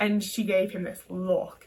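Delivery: ordinary delivery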